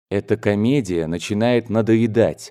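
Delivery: ordinary delivery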